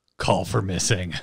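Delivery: put-on, wicked, extremely malicious, malice-dripping voice. Retelling own reply to a teammate's call: imitating a malicious voice. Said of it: "most malicious voice ever".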